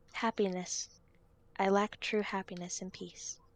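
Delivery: faint, soft, barely-there half-whispered voice. Narrating the words a soul speaks: faint half-whisper. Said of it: "And the whisper says".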